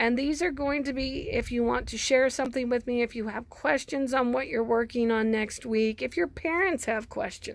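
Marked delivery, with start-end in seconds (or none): none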